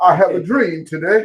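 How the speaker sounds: booming voice at full volume, very loud. Delivering a speech excerpt as a monologue: Martin Luther King Jr. impression. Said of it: "Come on, Martin".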